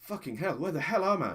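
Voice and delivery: put-on English accent. Retelling how a stranger in a crowd turned to you, in an english accent. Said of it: "in perfect English and an English accent says".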